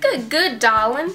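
put-on country accent. Playing a game, voicing a character's line aloud: country accent. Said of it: "I'm going to start saying it with a country accent".

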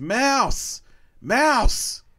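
shrill, very high, top-of-the-lungs full-volume yell. A player acting out their character's action in a role-play game, yelling at top of lungs. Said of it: "I yell at the top of my lungs".

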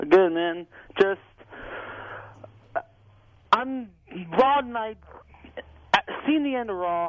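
halting, stammering, stuttering start, tripping over words. A caller, live on line two of a call-in show, answers the hosts, stuttering. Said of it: "Sorry, I'm stuttering".

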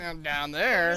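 acted, loaded, suggestive and insinuating delivery. Teasing a teammate by repeating how she said it: imitating Tina's suggestive tone. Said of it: "you said it kinda like".

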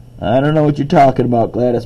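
ordinary talk

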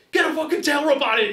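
shrill, very high screaming. Telling a fishing story, re-enacting screaming at the guy fighting the fish: retelling a scream. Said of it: "I'm screaming at him".

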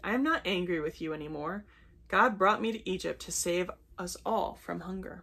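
plain

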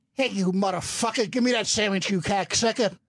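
hurried, rattled-off, rushed put-on voice. Asked by others to give a little Pesci, launches into a Joe Pesci impression. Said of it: "Give us a little Pesci".

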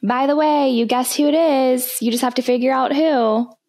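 put-on girl voice, convincingly done. Retelling what a girl said from across the street, imitating a girl's voice. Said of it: "you imitate the girl so well".

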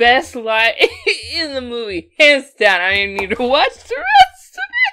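loud, high, laughing hard through words.

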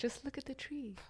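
very quiet, hushed, tiny high-pitched voice. Teasing the other speaker's talk of awareness, doing an Eckhart Tolle impression. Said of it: "that's very Eckhart Tolle of you".

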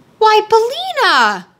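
startled, shocked, high-pitched cry. Narrator voicing Dorothy as she sees Bellina after fighting a rooster, shocked cry. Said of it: "cried Dorothy in a shocked voice".

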